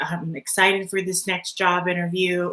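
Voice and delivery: ordinary talk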